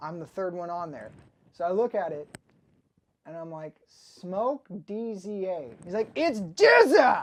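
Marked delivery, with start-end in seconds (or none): 6.1-7.2 high, very loud, annoyed, angry shout. Retelling how a man shouted a correction of his name; retelling an angry correction. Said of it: "He was pissed".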